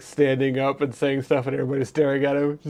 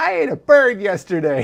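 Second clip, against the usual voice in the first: creepy, high, swooping scarecrow cackle; 7 semitones higher, 4 dB louder than usual. Joking about a scarecrow in a field, the speaker voices it as a cackling scarecrow voice. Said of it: "the scarecrow in the field cackles".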